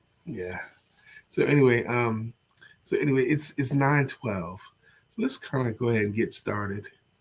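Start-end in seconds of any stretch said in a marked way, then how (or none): 2.9-6.9 calm, calm voice. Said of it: "You sound like Mister Rogers".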